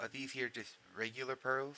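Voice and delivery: put-on American Southern drawl. Asking the game master about pearls in character: southern accent. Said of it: "I talk in a southern accent".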